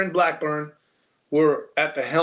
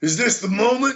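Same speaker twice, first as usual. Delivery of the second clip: high, pro wrestling show style delivery; 7 semitones higher than usual. Explaining how Buckley said it like a wrestling thing: WWF wrestling voice. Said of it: "like W W F kinda".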